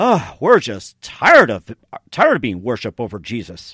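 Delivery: heavy mocking sarcasm, swooping delivery.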